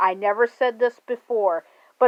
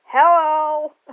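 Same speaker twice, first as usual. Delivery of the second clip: small, high, squeaky put-on voice; 6 semitones higher than usual. Tribute message, greeting everybody: squeaky voice. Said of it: "I just did it in a squeaky voice".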